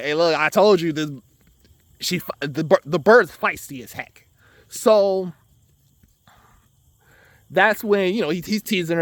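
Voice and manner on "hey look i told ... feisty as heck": normal talking voice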